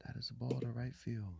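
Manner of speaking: soft, creaky, close-in conversational murmur. Describing broadcasters who talk softly instead of screaming: Vin Scully calm call. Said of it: "just talking to you, dude, whispering in your ear".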